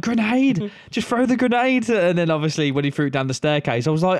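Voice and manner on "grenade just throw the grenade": mock shouting, pitched high. Recalling watching a war scene on TV, retelling shouting at the TV. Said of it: "I was shouting at the TV".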